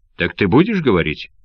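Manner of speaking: ordinary delivery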